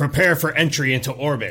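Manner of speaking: loud announcer voice, as over an intercom speaker. Voicing an announcement over the ship's intercom: intercom announcement voice. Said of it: "a voice come over the intercom speaking in Githyanki".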